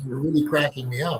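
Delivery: ordinary delivery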